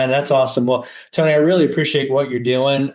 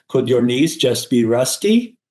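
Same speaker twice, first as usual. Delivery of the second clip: put-on European accent. Retelling what a man from europe told him about his knees, in a submarine pilot accent. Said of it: "submarine pilot accent".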